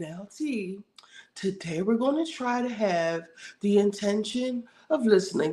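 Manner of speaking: play-acted patronizing, talking-down voice. Retelling a reunion scene, kneeling before someone: imitating talking down to a patient. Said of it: "she's talking to her like a fucking mental patient".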